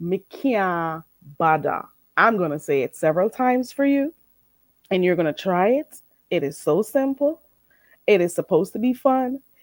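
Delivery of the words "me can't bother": Jamaican patois pronunciation. Teaching viewers a phrase to repeat: Jamaican Creole pronunciation. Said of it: "How do you say it in Jamaican Creole".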